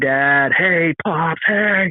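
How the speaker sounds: put-on very slow, stretched-out calling scream. Retelling calling out for a lost dad in strong wind: retelling own scream. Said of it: "I screamed".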